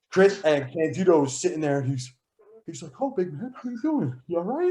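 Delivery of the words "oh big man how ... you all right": very high pitch swooping around. Retelling what Candido said while sitting there, in Candido's real high-pitched voice. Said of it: "he had this real high pitched voice".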